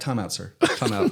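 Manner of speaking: soft, gentle, courteous hushed whisper. Retelling calling a time out to the ref: imitating own whisper. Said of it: "Did you actually whisper it?".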